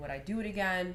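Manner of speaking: ordinary talk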